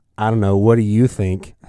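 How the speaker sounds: dry, sarcastic, throwaway delivery, mock tone. Retelling own reply to a stranger's question, imitating own sarcastic reply. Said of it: "of course I was sarcastic".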